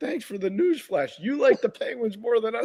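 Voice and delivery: high-pitched, shrill, accusing yell. Retelling how a player yelled at the speaker during a game: imitating someone yelling. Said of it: "he yelled at me during a game".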